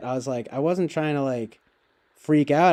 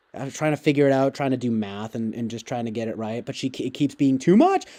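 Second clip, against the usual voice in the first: normal talking voice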